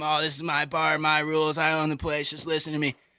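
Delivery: angry screaming and yelling rant. Act out a man demanding a 21-year-old's Facebook at the bar, imitating someone screaming and yelling. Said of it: "screaming at him, yelling at him".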